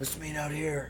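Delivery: very quiet, hushed, low-key, under-the-breath voice. Retelling a conversation about a match, quoting Johnny Ace: Johnny Ace impression. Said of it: "Killing it on that impression".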